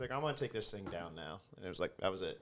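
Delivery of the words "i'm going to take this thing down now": put-on totally unbothered, super calm, even delivery. Retelling a hijacker talking on the intercom: imitating a super calm voice. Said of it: "So he was super calm".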